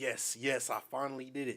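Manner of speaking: plain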